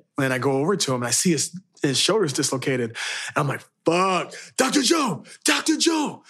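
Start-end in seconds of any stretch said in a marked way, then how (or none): 3.9-6.2 panicked, screaming voice. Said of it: "I was just screaming at Doctor Joe".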